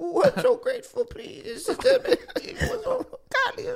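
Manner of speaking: put-on tearful joy, very high, laughing and sobbing.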